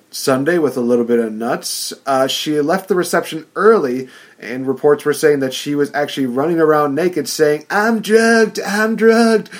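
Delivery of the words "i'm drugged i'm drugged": very high, flat, slow, drawn-out voice. Retelling reports about a wedding guest running around: Lindsay Lohan Robot Chicken impression. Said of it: "my best Lindsay Lohan ch-, robot chicken impression".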